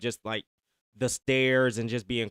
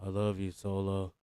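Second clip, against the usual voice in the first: flat, unenthused, zero excitement; 4 semitones lower, 6 dB quieter than usual. Retelling a wrestler's reluctant line: Jacob Fatu with no enthusiasm. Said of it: "real just no enthusiasm whatsoever".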